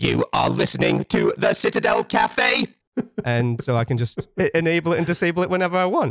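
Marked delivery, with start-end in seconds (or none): 0.0-2.7 mechanical, robotic machine voice. Speaker demonstrates a microphone button that changes his voice; Dalek voice. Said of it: "it suddenly becomes".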